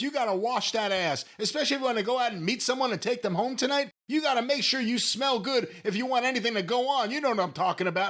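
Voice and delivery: fast, mock announcer-style yell. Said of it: "I don't know why I'm yelling".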